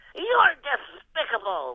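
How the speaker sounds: high, swooping cartoon duck character voice. A guest runs through the Looney Tunes roll call, doing a Daffy Duck voice. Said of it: "Daffy Duck".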